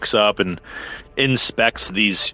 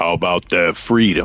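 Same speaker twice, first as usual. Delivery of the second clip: deep, low voice; 3 semitones lower than usual. A narrator voices a lion-folk figure speaking from behind: deep booming voice. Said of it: "deep, familiar, booming voice".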